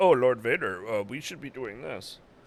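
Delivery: bossy manner. Retelling how the Inquisitor tells Lord Vader what to do: imitating the Inquisitor. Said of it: "Inquisitor's telling Lord, Lord Vader what to do. He's like".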